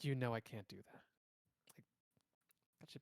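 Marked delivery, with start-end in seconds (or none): 0.0-1.0 put-on voice, more feminine than intended. Doing a voice that keeps coming out more femme than intended. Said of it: "making the voice more femme than I intend".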